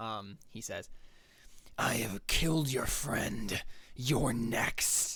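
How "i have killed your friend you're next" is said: burning, searing voice. Telling the players what he says to them, burning voice. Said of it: "in a burning voice".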